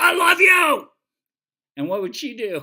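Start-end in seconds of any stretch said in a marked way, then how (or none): 0.0-0.9 shrill, very high, very loud, harsh angry shout. Showing listeners how tone alone frightened the dog: harsh angry tone. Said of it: "she was sure I was angry".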